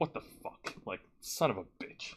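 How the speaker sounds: whispered, muttered under the breath. Recounting a commentator getting a drink poured on him, imitating muttered cursing. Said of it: "cursing him under his breath".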